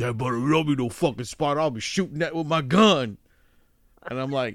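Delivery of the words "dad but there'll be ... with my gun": put-on tough gruff voice. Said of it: "why does [name] sound like Mister T?".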